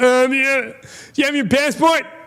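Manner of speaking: squeaky, very high-pitched teasing voice. Retelling how a friend messes with people coming into the club: imitating a friend's voice. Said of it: "so he talks like this sometimes".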